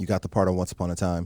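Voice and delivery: ordinary talk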